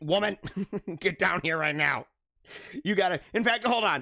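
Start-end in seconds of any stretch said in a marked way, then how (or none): 0.0-3.2 put-on bossy, demanding tone. Husband acting out how he'd normally order his wife, mock-demanding order. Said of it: "I would be far more demanding".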